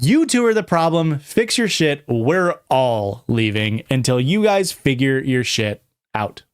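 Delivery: ordinary talk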